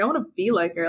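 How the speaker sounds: normal talking voice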